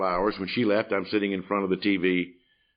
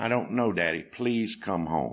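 put-on trembling little child's voice. Retelling his little girl's phone call: imitating a trembling little voice. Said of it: "a trembling little voice on the other end would say".

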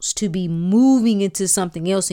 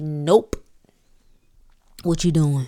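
confronting, challenging tone; 4 semitones lower than usual. Speaking as one's spirit disrupting a way of life, playing the 'what you doing' voice. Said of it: "That's the voice that I'm playing right now".

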